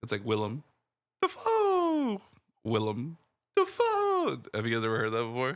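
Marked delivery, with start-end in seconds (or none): 0.2-4.4 very high, swooping cartoon animal voice, frog to cockatoo. Retelling a tv gag about a name: imitating a frog talking to a bird. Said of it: "a frog talking to a, uh, to a bird".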